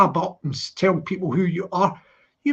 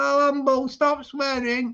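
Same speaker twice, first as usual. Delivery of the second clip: attempted Scouse accent, pitched up; 5 semitones higher than usual. Speaker retells what a man said, trying a scouse voice. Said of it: "I'll try and do a Scouse voice".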